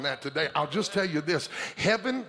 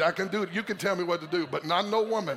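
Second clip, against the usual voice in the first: ordinary delivery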